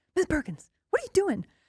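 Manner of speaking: indignant, huffy, very high scolding tone. Teacher retelling how the building's union rep came over to her: imitating a huffy man. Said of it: "he's in a big huff".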